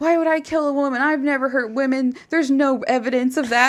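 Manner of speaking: put-on furious ranting. Retelling how the man in an interview video rants: imitating an angry rant. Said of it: "he starts ranting, he gets all pissed".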